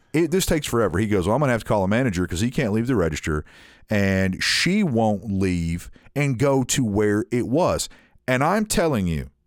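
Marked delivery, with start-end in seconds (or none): none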